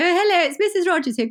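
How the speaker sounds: high, loud, sweet-sounding put-on posh voice.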